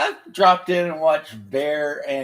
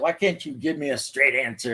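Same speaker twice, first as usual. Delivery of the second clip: mock fed-up, frustrated, exasperated, impatient tone. Retelling a scene from The Last Unicorn: imitating a frustrated character. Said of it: "and she gets frustrated".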